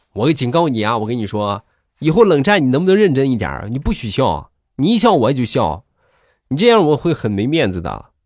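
firm, scolding tone. Telling about fights with his wife, the speaker imitates her warning him. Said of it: "就警告我".

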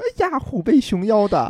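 jokey, ribbing tease. Retelling own words from an argument: imitating own teasing, joking tone. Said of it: "很开玩戏谑的说".

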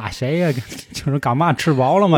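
put-on Tianjin dialect, badly done. Act out your father answering a phone call from home, in a bad Tianjin dialect imitation. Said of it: "跟我说天津话".

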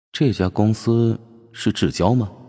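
ordinary talk

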